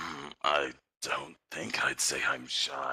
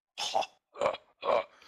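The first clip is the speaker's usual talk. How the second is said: hoarse, scratchy, raspy laughter. Admitting embarrassment after a compliment, a character laughs it off with raspy laughter. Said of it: "His laughter is really like raspy".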